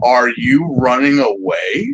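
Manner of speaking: put-on menacing tone. Retelling what a figure in the background asks: imitating a menacing question. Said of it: "standing there menacingly looks at you".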